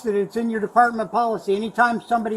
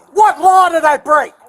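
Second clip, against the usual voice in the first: furious, higher and louder; 7 semitones higher, 11 dB louder than usual. Questioning an officer while in handcuffs: angry. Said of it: "I'm pissed off!".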